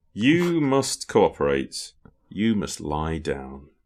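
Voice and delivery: menacing, sinister, swooping delivery. Reading a quiz quote for the others to guess: sinister quoted line. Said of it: "That's sinister".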